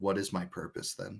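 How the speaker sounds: mumbling quietly. Voicing a character who mutters under his breath: muttering under his breath. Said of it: "all you hear under Sue's breath is".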